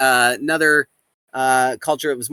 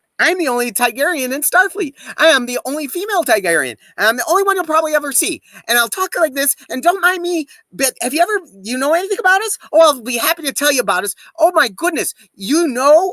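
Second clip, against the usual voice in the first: very high, rapid-fire talking; 11 semitones higher than usual. Describing Amalex, a character the speaker runs, the speaker performs her talking a mile a minute. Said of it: "talking a mile a minute".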